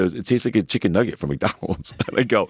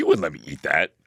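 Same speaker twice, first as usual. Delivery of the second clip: put-on laughing speech, lower pitch; 4 semitones lower than usual. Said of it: "he starts laughing".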